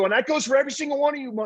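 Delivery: fired-up, high-pitched, fast rattled-off delivery.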